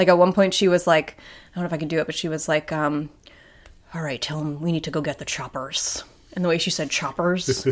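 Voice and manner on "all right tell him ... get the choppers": put-on actress voice, hissing S sounds, lower and quieter. Imitating an actress saying a line from a show: Jodie Foster voice. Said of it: "that's a pretty good Jodie Foster".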